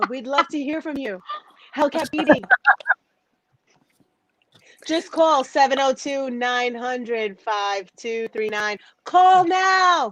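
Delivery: put-on sultry, seductive late-night radio host voice. Inviting listeners to call in on air: put-on hotline voice. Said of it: "Why you sound like that?".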